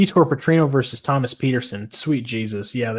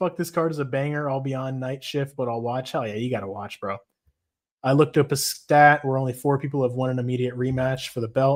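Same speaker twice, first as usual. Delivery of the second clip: usual speaking voice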